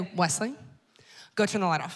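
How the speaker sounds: put-on calm, sweet, quick delivery. Speaker retells asking Wesley to turn off the light, mock-calm, sweet request. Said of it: "I very calmly and sweetly say".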